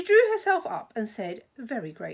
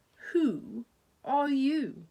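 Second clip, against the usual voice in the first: lazy, half-asleep, languid, sleepy voice; 2 semitones higher than usual. Narrator reads the caterpillar addressing Alice, in a languid, sleepy voice. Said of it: "addressed her in a languid, sleepy voice".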